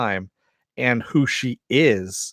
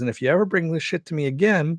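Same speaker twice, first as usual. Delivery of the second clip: put-on matter-of-fact sweet voice, higher; 6 semitones higher than usual. Retelling a line from the show in character: King Shark voice, matter-of-fact but sweet. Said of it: "just the way he says it with, uh, Ron Funches's voice".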